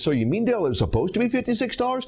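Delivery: deliberately upward-lilting, rising inflection. Retelling a past question to Dale, letting the voice rise on purpose. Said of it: "So I let my voice go up on purpose".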